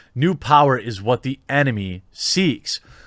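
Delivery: ordinary talk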